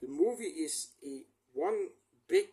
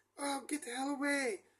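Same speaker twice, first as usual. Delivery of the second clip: very high, shrill, shrieking yell; 11 semitones higher, 3 dB quieter than usual. Retelling a scene where a man in the cellar yells to her, retelling a yell. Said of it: "he yells to her".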